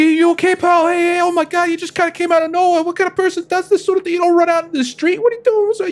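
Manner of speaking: very high, worried, concerned middle-aged voice. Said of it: "this guy comes over, he's like".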